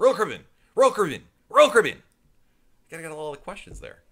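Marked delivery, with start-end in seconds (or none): 0.0-2.0 very loud, really fast, rapid-fire repeating. Speaker welcoming viewers shows how he says a cruise line's name, really fast. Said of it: "I say it really fast".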